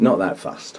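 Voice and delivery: quiet, low, self-deprecating throwaway aside.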